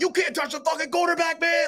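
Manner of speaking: play-acted very high, shrill yelling. Retelling a player yelling at another player in the hallway: imitating Pratt yelling. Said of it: "you got Pratt yelling".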